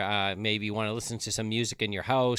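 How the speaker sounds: ordinary delivery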